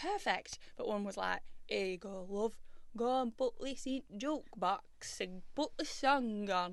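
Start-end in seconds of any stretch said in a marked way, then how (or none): 1.7-6.7 slow, fake, bad Yorkshire accent. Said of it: "You're definitely from down south".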